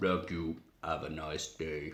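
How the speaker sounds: very deep, hushed, flat monotone robot voice. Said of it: "it's Ed two oh nine voice".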